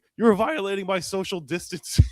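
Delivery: shrill, very high yelling. Retelling how he yelled while people rushed him: imitating someone yelling. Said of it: "and he's yelling".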